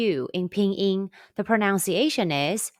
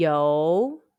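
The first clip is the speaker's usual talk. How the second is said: yo with a rising, question-like second tone; 7 semitones lower than usual. Chinese tone lesson, repeat after me: rising second tone on yo. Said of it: "the high rising second tone, the question tone".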